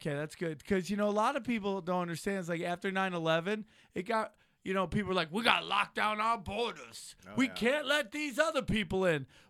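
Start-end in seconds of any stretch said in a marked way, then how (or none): 5.3-9.2 loud, blustery, drawling Southern cartoon-style voice. Quoting what people said after 9/11, in a Foghorn Leghorn voice. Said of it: "Was that foghorn leghorn locking off the borders".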